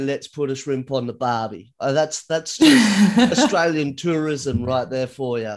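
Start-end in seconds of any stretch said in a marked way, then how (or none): none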